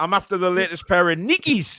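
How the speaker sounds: put-on Newcastle Geordie accent. Imagining walking into a trainer shop and asking: geordie accent. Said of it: "That sounds pretty Geordie".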